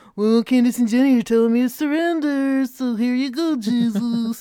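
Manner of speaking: loud, cartoonish puppet character voice. Acting out surrendering only out of obligation, the speaker uses a Muppet voice. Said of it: "that was my Muppet surrender voice".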